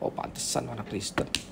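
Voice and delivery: low, soft, scornful sneering tone. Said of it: "Sama nadanya gini".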